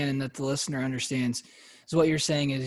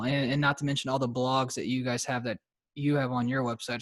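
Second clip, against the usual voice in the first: ordinary talk, nothing marked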